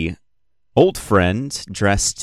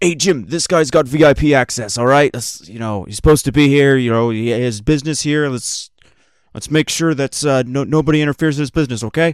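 high, carrying yell across a distance; 6 semitones higher, 4 dB louder than usual. Game master voicing a guard calling across to Jim, yelling across. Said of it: "yells out across".

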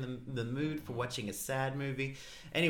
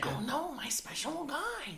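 very high, sing-song, swooping cartoon mother voice; 13 semitones higher than usual. Show how you clear your throat before saying something as Marge, in a Marge voice. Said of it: "whenever you're about to say something as Marge".

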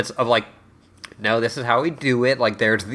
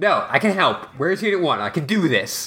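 put-on yelling, higher; 4 semitones higher than usual. Recapping a scene's plot, retelling Shinji yelling. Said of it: "starts, like, yelling".

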